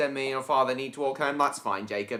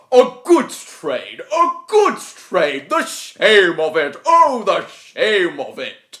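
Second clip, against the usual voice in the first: slow, booming character voice with big pitch swoops; 5 semitones higher, 11 dB louder than usual. Showing their voice for the character Gordon, Gordon voice. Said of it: "this is my Gordon voice".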